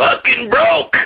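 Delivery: put-on grumbling voice, pitched very high. Doing another version of the same actor: Michael Wincott impersonation. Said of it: "a Michael Wincott impersonation".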